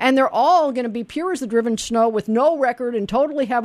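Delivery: plain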